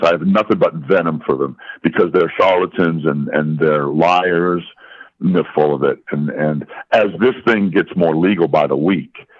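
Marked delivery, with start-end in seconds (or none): none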